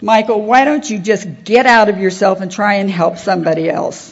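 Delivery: stern, unsympathetic voice. Recounting a panic attack, the speaker voices the inner voice that spoke to him, imitating a stern inner voice. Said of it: "It was like a stern".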